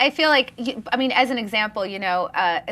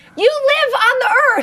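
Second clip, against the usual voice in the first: incredulous, very high, loud shout; 7 dB louder than usual. Speaker reenacting yelling at a newsman's question on tv, retelling a yell. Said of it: "I'm literally yelling at the TV".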